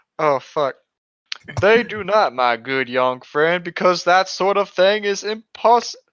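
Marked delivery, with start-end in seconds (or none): 1.6-6.0 put-on heavy, laid-on rural country accent throughout. In a role-play game, a player restarts a Shinigami character's line in a thick country accent. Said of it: "The thick country accent".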